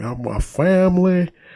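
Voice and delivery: put-on Southern accent. Retelling his speech to fans after landing in louisiana, fake southern accent. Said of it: "the southern accent he tried to put on".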